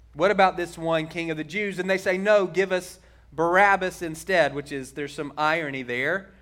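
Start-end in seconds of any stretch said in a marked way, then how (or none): none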